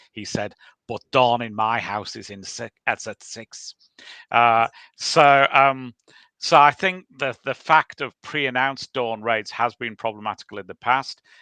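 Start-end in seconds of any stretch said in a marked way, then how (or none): 0.9-3.8 attempted, put-on Liverpool Scouse accent. Quoting a politician called Derek Hatton on dawn raids: imitating a Scouse accent. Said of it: "so I will attempt the accent".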